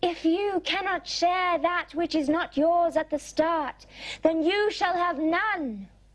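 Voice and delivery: high-pitched, storybook talking-flower voice. A narrator reads the shaking flower's words in a story, in a high-pitched voice. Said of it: "a high-pitched voice from its center arose".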